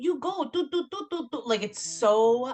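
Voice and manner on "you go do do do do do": very high, cringey, clumsy put-on mocking broken-English accent. Mocking an audiobook narrator voicing a medicine man in Bali: mocking the narrator's Ketut Liyer accent. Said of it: "whenever she's being him talking, she's like".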